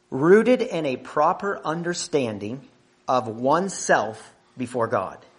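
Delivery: slow, deliberate reading voice.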